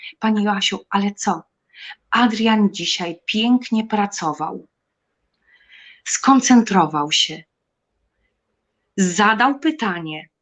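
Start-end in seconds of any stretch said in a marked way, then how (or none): 0.2-1.4 put-on trembling, shaky, quavering voice. Frightened, the speaker retells her reply to a woman speaking to her, in a trembling voice. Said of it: "z takim drżącym głosem".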